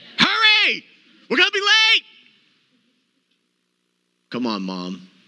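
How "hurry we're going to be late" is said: very high, shrill, swooping, rushed yell. Asking the audience about yelling when rushed, the speaker acts it out, mock yelling in a hurry. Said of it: "Do we do our best yelling when we're in a hurry?".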